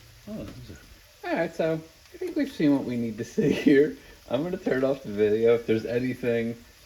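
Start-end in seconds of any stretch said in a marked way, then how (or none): 1.6-6.6 raised voice, words broken up by laughter. Speaker wrapping up a video, laughing at themselves while talking. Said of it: "I'm laughing at myself".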